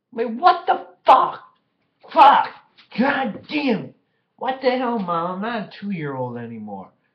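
very loud, very high, shrill, swooping furious outburst. Reacting to a text from mom: angry. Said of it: "I'm freaking pissed off".

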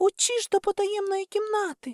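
very high-pitched, sudden shout. As robbers give chase, she pulls her friend toward the hidden room, shouting. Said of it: "крикнула Ані".

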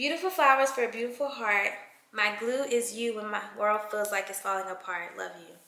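ordinary talk

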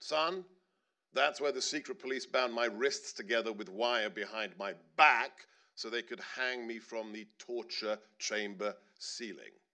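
normal talking voice

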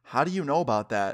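plain

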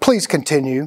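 mock firm, authoritative commanding tone. Describing an obedience experiment, quoting the experimenter's command in a mock-authoritative tone. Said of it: "in the authoritative tone".

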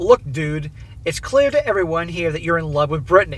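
ordinary delivery

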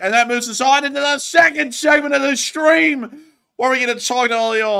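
full-throated, very high-pitched scream. Streamer announcing the stream's second segment to viewers, screaming. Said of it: "I don't know why I'm screaming like that".

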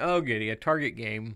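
ordinary delivery

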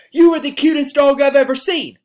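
loud, high yelling at full volume. Showing how yelling at a dog sounds, yelling. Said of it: "if you look at it and you're yelling".

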